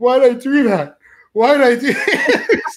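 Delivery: mock very high, blubbering, wailing sob, drawn out. Retelling what a crying guy at the eating challenge said: imitating a man crying. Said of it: "he was crying".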